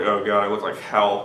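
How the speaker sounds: ordinary talk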